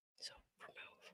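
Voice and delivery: very soft whisper. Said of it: "Are you whispering?".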